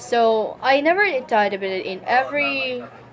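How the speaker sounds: plain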